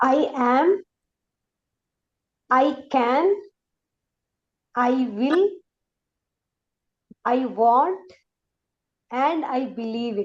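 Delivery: slow, word by word, pausing after each. Modelling affirmations for a listener to repeat, slow, pausing after each word. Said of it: "Stop at each word. Pause".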